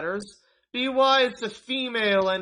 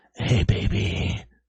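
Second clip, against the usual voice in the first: put-on, phony, very low bass voice; 13 semitones lower than usual. Demonstrating talking to a girl on the phone, phony deep voice. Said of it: "do a phony deep voice".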